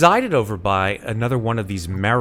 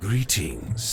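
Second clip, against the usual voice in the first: mellifluous, smooth musical creature voice, quieter; 6 dB quieter than usual. Voicing a huge spiked creature greeting the party: mellifluous creature voice. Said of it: "This sort of mellifluous voice issues from this creature".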